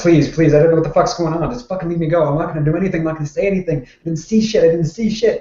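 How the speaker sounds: fast, high-pitched, desperate begging and pleading. Grabbed by the players' character, a captured man pleads for his life. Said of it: "he is pleading for his life".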